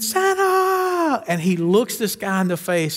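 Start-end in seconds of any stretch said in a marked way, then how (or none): 0.0-1.2 acted, very high, long drawn-out shriek. Retelling a movie scene in a department store where a man starts: retelling a scream. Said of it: "he starts screaming".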